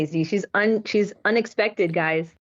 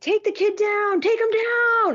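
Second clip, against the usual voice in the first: put-on, very high, shrill hollering yell; 12 semitones higher than usual. Retelling a grandfather at a Taekwondo match yelling: imitating a dad yelling. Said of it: "And my dad was yelling".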